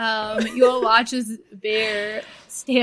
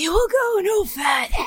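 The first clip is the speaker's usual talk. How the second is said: very high, breathy, hostile, antagonistic voice; 10 semitones higher than usual. A game master voices a figure holding a flail, in a breathy antagonistic voice. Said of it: "in this like breathy kind of like antagonistic voice".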